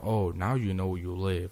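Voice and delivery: put-on snide voice with attitude. Retelling what a cop said back in the car: imitating a cop with an attitude. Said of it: "the cop had an attitude".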